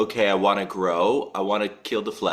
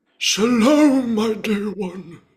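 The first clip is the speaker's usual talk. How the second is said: theatrical put-on voice, much higher and louder; 13 semitones higher, 4 dB louder than usual. Greeting her again as she comes back, in a theatrical voice. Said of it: "that voice".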